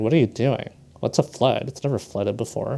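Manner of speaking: ordinary talk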